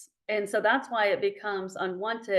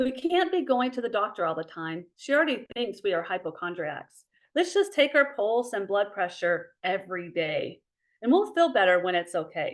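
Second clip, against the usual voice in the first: ordinary talk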